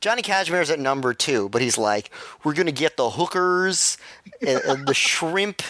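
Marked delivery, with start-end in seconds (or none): 2.4-5.6 put-on heavy, thick Philadelphia accent, laid on. Describing how a person talks, imitating a thick Philadelphia accent. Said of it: "the thickest Philadelphia accent I've ever heard".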